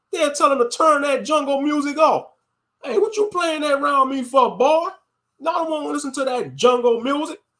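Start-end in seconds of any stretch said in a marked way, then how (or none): 2.8-7.3 scolding, telling-off grandparent voice. Mocking grandparents who scold about the music: imitating a racist grandparent. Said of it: "around their racist grandparents".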